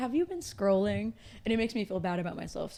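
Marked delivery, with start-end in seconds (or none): 0.0-1.1 gentle, very calming, soothing woman's voice. Act out the bedtime alarm that makes you feel bad, imitating a very calming woman. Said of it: "this very calming woman who just looks at you and goes".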